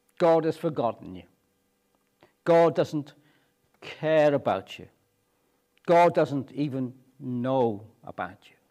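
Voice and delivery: plain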